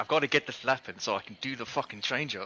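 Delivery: agitated, worked-up voice. Retelling own words while stuck behind a car during a lap: retelling own agitated words. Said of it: "I was getting a bit agitated".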